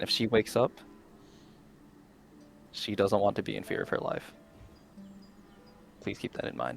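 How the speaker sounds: low, hushed, barely above a whisper. A game master's character speaks to the party about the girl, in a low voice. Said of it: "just in a low voice".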